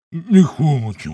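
grumbling. The pastor's little son, pulled close by the pastor, grumbling. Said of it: "той буркнув".

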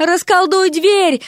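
high, shrill yelling. Narrator reading Vasya yelling at Derek while a demon chases him, yelling into his ear. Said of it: "заорала Дереку на ухо Вася".

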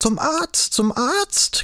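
very high, shrill, drawn-out shrieking screech. Frau Daumer calls out to Anna, who is running toward her, shrieking. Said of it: "kreischte Frau Daumer".

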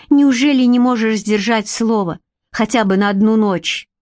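ordinary delivery

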